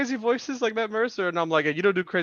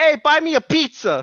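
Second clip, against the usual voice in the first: put-on New York accent, very loud and slow; 7 semitones higher, 9 dB louder than usual. Retelling a bit where people find a knife, in an attempted New York accent. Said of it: "I was trying to do a New York accent".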